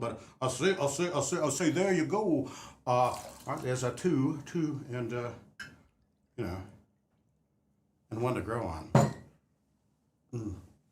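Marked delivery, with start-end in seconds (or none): 0.0-1.7 put-on cartoon rooster voice. Pouring bourbon for a drink, the speaker suddenly slips into a Foghorn Leghorn voice. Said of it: "I'm suddenly a foghorn leghorn".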